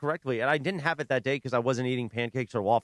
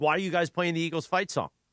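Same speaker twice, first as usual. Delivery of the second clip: mock angry yelling; 3 semitones higher than usual. Imagining DeMarco visiting and scolding them: imitating DeMarco yelling. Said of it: "yell at us, like".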